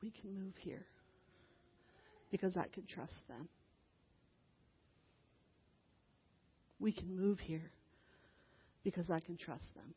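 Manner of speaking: very quiet, close whisper. Retelling a girl whispering into the speaker's ear in the car: imitating a whisper. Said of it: "whispers into my ear".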